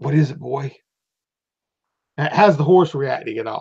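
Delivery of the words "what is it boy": soft half-whisper, close in the ear. Voicing a rider half-whispering in his horse's ear: half-whispering in character. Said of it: "He's whispering in his ear".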